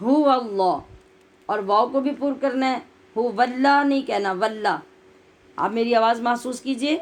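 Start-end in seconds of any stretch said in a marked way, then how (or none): 0.0-0.8 heavy, full voice with thick articulation. Showing learners how to read the words: heavy full voice. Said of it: "موٹا یعنی پر پڑھنا ہے اور بھاری آواز کے ساتھ".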